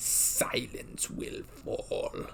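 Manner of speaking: breathy villain voice, near-whispered, barely above breath. Trying out a voice while talking about a recurring villain, Palpatine impression. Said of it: "that's turning more into Palpatine".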